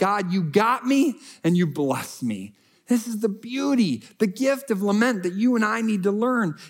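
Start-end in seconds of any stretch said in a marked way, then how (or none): none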